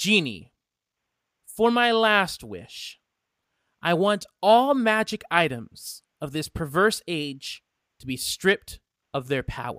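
dark, grandiose villain goddess voice. Voicing a character's last wish to the genie, in a villain goddess voice. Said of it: "My name is [name], goddess of war and disease".

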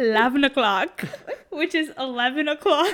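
put-on Indian accent, very loud. Answering a listener's request to tell the time again: Indian accent. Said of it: "I love your Indian accent".

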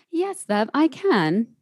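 put-on posh English accent. Asked to do her english accent one more time, answering in a posh english accent. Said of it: "Can you just do it one more time for me?".

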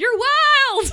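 piercing, very high, very loud, wild stretched shriek. Quoting a line from the film where Baby shrieks at Johnny: imitating Baby shrieking. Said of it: "when Baby shrieks".

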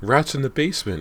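very high-pitched, breathless outcry. Asked what's wrong after the screaming, she cries out breathlessly. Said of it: "Callie cried breathlessly".

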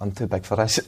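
hushed whisper. Speaker retells what he whispered to them, whispering. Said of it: "He just whispered to me".

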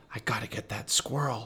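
whispering. Narrator reads a character on a plane speaking to a companion near his sleeping father, whispering. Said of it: "he whispered to Justin".

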